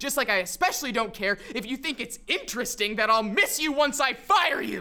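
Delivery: angry, very loud outburst. Character tells the person they will fire that they'll miss them: raising voice in anger. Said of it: "I'm raising my voice".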